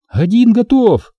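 very high shout, voice slightly shaky. Lieutenant Samoilova answers after firing her shots, shouting in a slightly trembling voice. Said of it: "крикнула она слегка дрожащим голосом".

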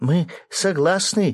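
high, glad, eager, joyful exclamation. A young woman answers the narrator's question; joyful exclamation. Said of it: "радостно воскликнула девушка".

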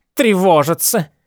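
scornful, contemptuous snort on a word. A mother scoffs at her daughter's excuse for him, snorting contemptuously. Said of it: "презрительно фыркнула".

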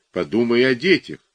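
ordinary delivery

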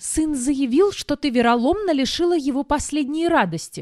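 reproachful, accusing complaint. A narrator reads the countess complaining to the narrator: reproachful. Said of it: "с претензией заявила графиня".

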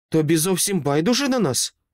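sharp, demanding, high-pitched voice. A woman answers the child's reply with a question: sharp question. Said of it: "різко запитала Сайленс".

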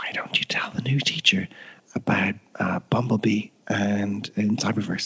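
quiet whispering. Retelling what they whispered into a boy's ear, whispered. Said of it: "I whispered in his ear".

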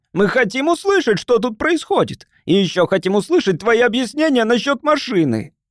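shrill, high squeaky voice. Narrator reads Charlie Fronsworth calling out to Rosen in a crowd: shrill, squealing voice. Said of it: "своим визгливым голосом".

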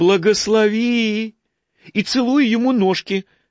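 fawning, thin little voice. A narrator reads a monk addressing the archbishop's photograph, thin fawning drawl. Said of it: "подобострастно затянул он тоненьким голоском".

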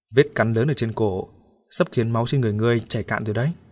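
ordinary delivery

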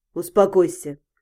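abrupt, curt, very low snapping voice. The king speaks to a man who has just flinched strangely; curt. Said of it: "отрывисто кинул ему Тицион".

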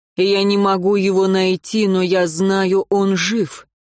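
plain

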